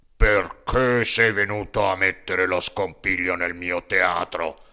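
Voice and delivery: big booming ogre voice, badly stuffed-up, heavy head cold. The puppeteer demands why Pinocchio disrupted his theatre, in a big ogre voice with a head cold. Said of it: "con un vocione d'orco gravemente infreddato di testa".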